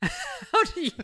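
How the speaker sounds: very high, slow, bewildered, exasperated squeal.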